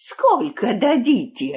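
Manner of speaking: spoken as a sharp, high hiss. A traitor goat answers the enemy's envoy, hissed. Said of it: "прошипел козел".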